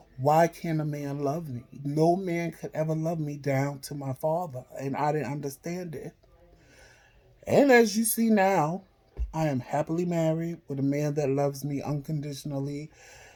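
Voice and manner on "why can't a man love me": put-on tearful, crying voice. Retelling sitting alone at home crying: retelling own past crying. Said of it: "I just sat there crying".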